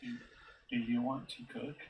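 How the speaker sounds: quiet whisper. Whispering a question to Kyle during the game: whispering. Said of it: "I'm gonna whisper to Kyle".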